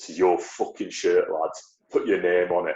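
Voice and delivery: thick, broad Yorkshire accent, exaggerated. Recalling being handed a club shirt, the speaker quotes Andy Bernard; thick Yorkshire accent. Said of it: "in his thick Yorkshire accent tell you".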